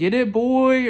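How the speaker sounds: super weird, squealing, very high, loud voice. Retelling calling out to a man mistaken for someone known, super weird voice. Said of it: "like super like weird voice".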